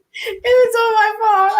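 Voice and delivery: mock wail, high-pitched and loud.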